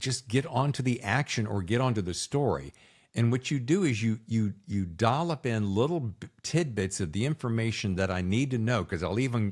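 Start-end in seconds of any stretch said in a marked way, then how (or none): none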